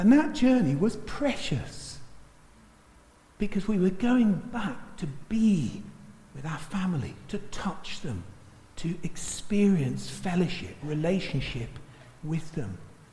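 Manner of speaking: heartfelt, deeply moved, emotional voice. Recalling past train journeys to family in france; getting emotional. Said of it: "I'm getting emotional now".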